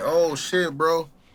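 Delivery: put-on alarmed, frantic, panicked outburst. Retelling how another man started panicking, imitating someone panicking. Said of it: "like started panicking".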